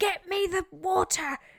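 put-on screaming. Acting out demands screamed at the other speaker while giving birth: pretend screaming demand. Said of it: "I'm gonna be possibly screaming at you going".

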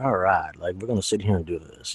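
low, relaxed, laid-back Southern accent. Explaining accents, showing how people down south sound: relaxed slow southern drawl. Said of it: "sound a little bit more relaxed, a little more slow down".

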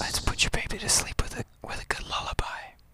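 quiet, soft, hushed whisper.

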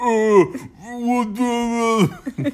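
put-on stupid-sounding deep voice. Showing how others imitate the speaker's voice: deep, stupid-sounding voice. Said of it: "they make me sound like an idiot".

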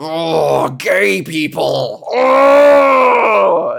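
put-on seething, very slow, rasping, loud, rough, drawn-out. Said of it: "they're just fuming".

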